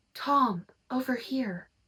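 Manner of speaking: put-on young girl's whisper. Reading a scary story aloud, a girl calling from nowhere: girl whispering. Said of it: "I hear a girl whisper".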